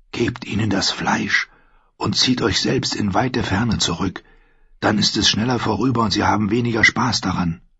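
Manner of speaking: soft, hushed whisper under the breath. While two men curse each other, a man advises the girl, whispered. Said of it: "flüsterte er".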